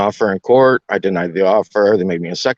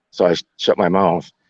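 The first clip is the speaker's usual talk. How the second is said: ordinary talk, nothing marked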